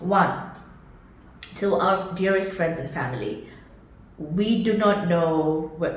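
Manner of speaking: voice catching and choking up, fighting back tears. Thanking friends and family at the end of a video, holding back tears. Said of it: "Don't cry, [name]".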